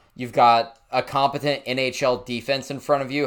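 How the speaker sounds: normal talking voice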